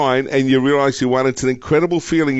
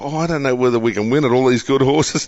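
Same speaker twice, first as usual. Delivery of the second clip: ordinary talk, nothing marked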